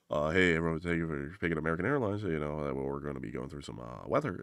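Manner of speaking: soft, mumbled delivery in an intercom announcer voice. Retelling the pilot's intercom announcement: imitating a mumbling pilot. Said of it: "the mumbler".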